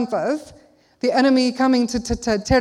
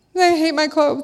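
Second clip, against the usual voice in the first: put-on crying voice, pitched much higher; 4 semitones higher than usual. Retelling Emma coming up before they left; imitating Emma crying. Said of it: "and she's crying".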